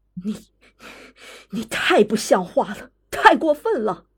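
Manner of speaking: stern, sharp, angry scolding tone. A woman rebukes her husband, speaking sharply in anger. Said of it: "她生气了，厉声道".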